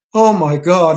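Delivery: frightened, feminine voice, exclaiming. Retelling how a big guy reacted to a picture downstairs: imitating a woman's voice. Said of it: "like in a woman's voice".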